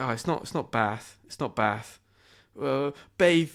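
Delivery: mock flustered, panicky, stumbling self-correction. Retelling reading a word aloud in class: imitating own panicked voice. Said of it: "I just panicked".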